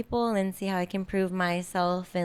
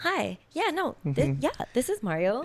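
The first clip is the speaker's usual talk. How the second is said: swooping, phone-line customer service voice; 4 semitones higher than usual. Retelling a friend answering a work phone call: imitating Mario's customer service voice. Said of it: "the customer service is".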